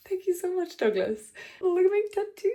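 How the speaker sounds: mock grateful, choked-up, on the verge of tears. Retelling thanking an Uber driver after his speech: imitating own near-tearful thanks. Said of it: "nearly crying in the back of the car".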